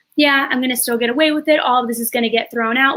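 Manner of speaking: plain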